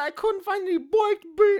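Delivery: put-on heavy, very high-pitched old granny voice. Retelling what she said as the beans came flying out: granny voice. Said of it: "Her granny voice".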